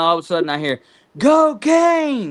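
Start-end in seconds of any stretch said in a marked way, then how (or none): 1.2-2.3 very high, loud hollered yell. Retelling a man yelling at the speaker out the window, imitating someone yelling. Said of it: "he's yelling out the window".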